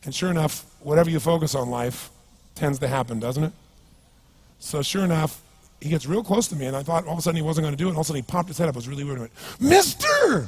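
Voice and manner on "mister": bizarre, very high, loud squeaky oddball voice. Retelling a man who came up begging, imitating his bizarre voice. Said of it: "He had this really bizarre looking sounding voice".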